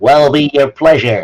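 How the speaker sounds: put-on robot voice with a twang. Narrating a bar scene, the speaker voices a bot programmed with a twang: twangy voice. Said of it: "in some kind of twang".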